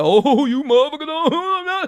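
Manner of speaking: jokey stand-up comic voice, laughing throughout. Retelling how he does Bernie Mac bits for people: Bernie Mac impression. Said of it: "I've done some Bernie Mac shit laughing like".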